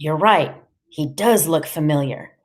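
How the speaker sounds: ordinary delivery, nothing marked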